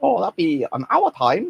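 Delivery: put-on high sing-song Chinese accent. Imitating staff at the local Chinese restaurant on the phone, in a slightly racist voice. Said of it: "doing a slightly racist voice".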